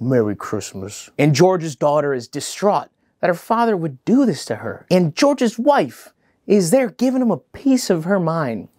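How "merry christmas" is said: put-on very low, soft, dejected, sad voice. Recapping a scene where a character walks away, imitating Leif's sad goodbye. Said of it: "Leif sadly walks away being like".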